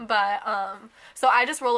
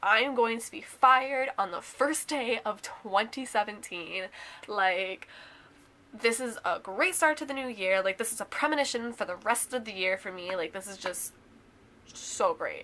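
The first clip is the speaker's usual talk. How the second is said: usual speaking voice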